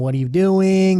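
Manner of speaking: put-on high, loud screaming. Recalling his whole team dropping in a game, retelling a scream. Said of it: "I'm screaming".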